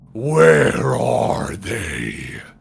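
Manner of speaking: very deep, booming voice echoing everywhere. Storyteller acting out an unseen voice calling down to a creature, booming echoing voice. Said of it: "you hear this v- booming voice that echoes from everywhere".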